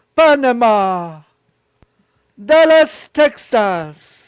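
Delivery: acted Italian-accented voice. Retelling how the Pope said city names: imitating the Pope's Italian accent. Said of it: "saying Dallas, Texas in an Italian accent".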